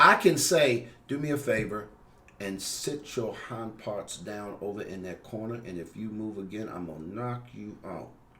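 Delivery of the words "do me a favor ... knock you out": low, very quiet, harsh, threatening voice. Showing a line with low volume but the wrong tone: quiet but harsh tone. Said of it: "My tone is off, but my volume is low".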